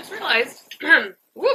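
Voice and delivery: high voice cracking mid-phrase. Talking to viewers while putting things away; voice cracking. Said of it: "My voice is cracking".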